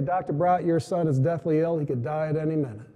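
ordinary talk

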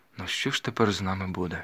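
plain reading voice

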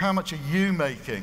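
mock scornful, disdainful, sneering tone. Acting out a question people often ask, imitating a sneering question. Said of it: "Done with a kind of sneer".

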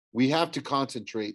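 plain reading voice

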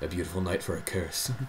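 low, soft shadowy voice. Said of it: "Do your shadow voice".

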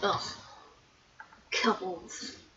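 whispered, breathy, envious, jealous grumble. Voicing a game character who watches a couple: imitating jealous grumble.

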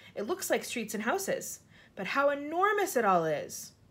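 plain

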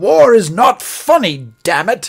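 put-on loud, harrumphing British army officer accent. Retelling a movie scene where an officer complains about a humor newspaper, harumphing british officer accent. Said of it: "And I'll do an accent".

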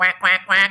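nasal voice, pinched nose. Showing a class how an oboe sounds like a duck: nasal voice, pinched nose. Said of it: "like you kind of have a clothespin on your nose".

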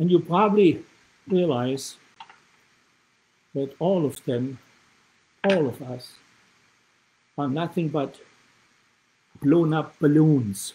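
shaking, trembling voice. Repeating words a woman once said to them, in a shaking voice. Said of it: "even today my voice is shaking".

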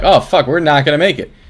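ordinary delivery

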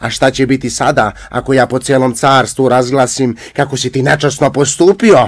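very high, furious, enraged shout. Narrator voices a tsar rebuking a young man who came to steal his firebird, angry shouting tsar. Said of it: "Car, kad vide da je mladić došao da mu ukrade žar pticu, silno se razgnevi pa povika".

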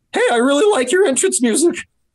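put-on very high, unbroken prepubescent teen voice. Speaker retells complimenting Bob Holly while he worked out, prepubescent teen voice. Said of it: "this is what I sounded like, a prepubescent teen".

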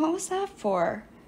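drowsy, sleepy mutter, half awake. A man just slapped across the face responds, muttering sleepily. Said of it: "he muttered sleepily".

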